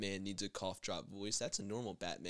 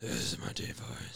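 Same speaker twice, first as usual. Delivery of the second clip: deliberately lowered, put-on deep voice; 10 semitones lower than usual. Asked by a friend on the podcast to do it again; put-on deep voice. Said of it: "was that your deep voice? Do it again".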